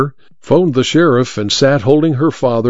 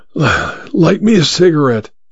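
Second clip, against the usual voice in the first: put-on wheezy, wheezing voice, much higher; 5 semitones higher than usual. A stranger lying in a roadside ditch, cradled by Emma, wheezing. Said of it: "he wheezed".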